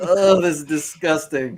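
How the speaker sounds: loud, play-acted, grossed-out, disgusted outburst. Retelling own reaction to a tv line: retelling own disgusted reaction. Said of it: "And I was like".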